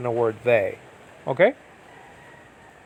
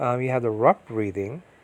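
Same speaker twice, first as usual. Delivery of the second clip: usual speaking voice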